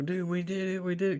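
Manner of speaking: triumphant, high-pitched, excited celebratory screaming. Retelling a moment when a plan worked: imitating screaming.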